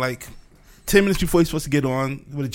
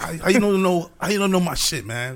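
mock irritated, offended, indignant griping; 2 semitones higher than usual. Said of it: "he got kinda pissed off".

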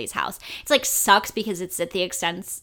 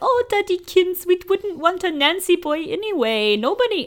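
put-on voice pushed very high; 11 semitones higher, 3 dB louder than usual. Acting out the Dursleys answering teachers, sounding like Miss Piggy. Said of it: "I sound like Miss Piggy".

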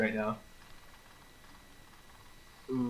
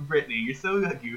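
ordinary talk, nothing marked

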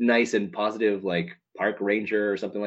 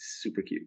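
hushed, breathy near-whisper, voice dropped right down; 10 dB quieter than usual. Calling the at&t girl super cute, speaking in a lowered, quiet voice. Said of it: "I have to lower my voice for this".

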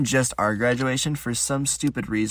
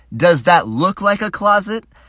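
raised, high, loud, angry voice; 8 semitones higher, 7 dB louder than usual. Retelling a woman who pointed to a room: imitating her raising her voice. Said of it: "she raises her voice at me and goes".

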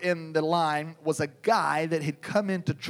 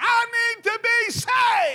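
mock very high, loud bellowed shout; 5 dB louder than usual. Retelling how a big man dropped to his knees in church, retelling a bellow. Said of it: "he bellowed out".

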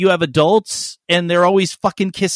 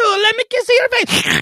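put-on Italian-grandmother-sounding voice. Talking to the baby, sounding like an Italian grandmother. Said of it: "Totally sound like an Italian like a relative".

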